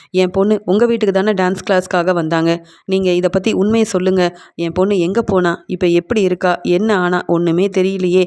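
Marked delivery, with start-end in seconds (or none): none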